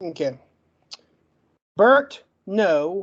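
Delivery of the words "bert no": stuttering, getting stuck on a word. Reading witness names aloud after an apology, stuttering, stuck on a word. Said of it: "I can't get the word out".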